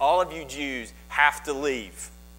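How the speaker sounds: ordinary talk, nothing marked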